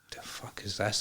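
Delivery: soft, whispered, bewildered disbelief.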